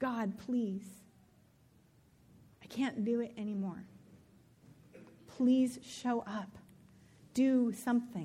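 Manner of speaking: slow, desperate, pleading voice. Retelling a prayer prostrate on the kitchen floor: reenacting own desperate begging. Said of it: "There was a lot of begging".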